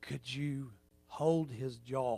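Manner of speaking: hushed, very quiet, low soft voice. Retelling what a dentist said to the dental assistant, soft voice. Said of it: "he says in a soft voice".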